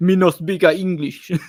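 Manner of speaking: put-on Eastern European accent, loud. Retelling his reply to businesses asking him to wear a mask: fake Eastern European accent. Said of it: "in a fake Eastern Euro accent".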